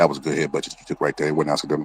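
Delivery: soft, hushed, secretive stage whisper. Acting out the referee talking to the fighter Crawford: imitating a half-whisper. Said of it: "He gonna whisper to Crawford like".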